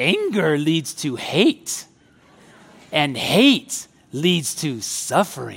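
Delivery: low, slow, drawn-out character voice with swinging pitch. Quoting what Yoda said about anger to listeners, in a practiced Yoda voice. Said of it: "You like my Yoda voice?".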